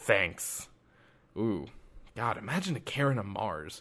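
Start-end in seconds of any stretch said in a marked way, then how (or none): 0.0-0.7 sarcastic tone. Imitating an ungrateful colonist thanking someone, imitating a sarcastic thanks. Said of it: "it'd be that sarcastic".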